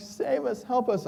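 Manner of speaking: shrill, ragged, high, drawn-out panicked scream. Telling about a van crashing into a ditch, the speaker quotes those inside, retelling screaming for help. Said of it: "they're like screaming like".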